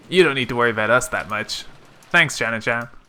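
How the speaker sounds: plain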